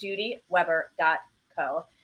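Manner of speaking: slow, deliberate, careful enunciation of each part. Giving a website address slowly so it comes out correctly, slow and careful. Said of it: "I'm just saying it slowly".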